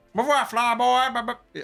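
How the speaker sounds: slow, high Alabama drawl. Acting out a princess's line from Episode 4: Alabama-accent Leia. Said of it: "That's Alabama Leia".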